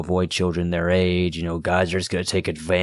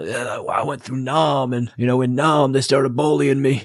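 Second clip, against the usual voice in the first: mocking complaining old man voice, pitched up; 7 semitones higher, 3 dB louder than usual. Mocking a guy's constant complaining: mocking old man voice. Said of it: "talking like he's, like, ninety years old".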